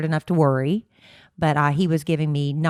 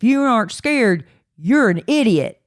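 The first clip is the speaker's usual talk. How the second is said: bad, overdone put-on Louisiana accent, loud and high; 6 semitones higher, 5 dB louder than usual. Quoting what the Louisiana governor said, the speaker does a bad Louisiana accent. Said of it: "I'm going to do a bad accent".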